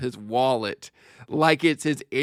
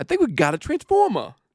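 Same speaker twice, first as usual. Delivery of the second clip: put-on Boston accent on "transformer", pitched up; 9 semitones higher than usual. Quoting a movie line: Mark Wahlberg Boston accent. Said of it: "hearing transformer in the Boston accent".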